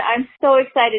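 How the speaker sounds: usual speaking voice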